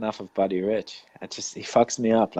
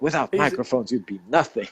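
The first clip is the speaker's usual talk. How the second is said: flipping-out, blown-up angry rant; 2 semitones higher than usual. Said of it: "flipping out on them".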